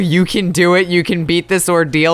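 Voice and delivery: ordinary talk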